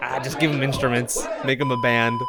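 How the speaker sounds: normal talking voice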